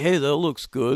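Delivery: soft, hushed half-whisper. Retelling talking during a movie's opening credits, acting out half-whispering. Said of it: "I'm like whispering".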